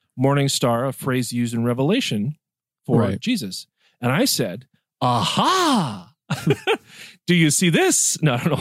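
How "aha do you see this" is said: put-on very slow, drawn-out, sing-song Yiddish accent. Speaker retelling pointing out a Bible passage to someone, in a sudden Yiddish accent. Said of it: "I don't know why I'm talking like that".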